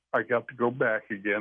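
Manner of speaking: ordinary delivery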